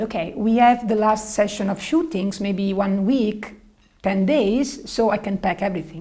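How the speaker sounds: normal talking voice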